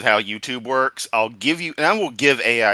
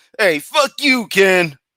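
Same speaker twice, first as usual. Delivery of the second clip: put-on New York accent, slow and high; 7 semitones higher, 3 dB louder than usual. Imagining cursing someone out at a protest: New Yorker voice. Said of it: "Put on the New Yorker voice".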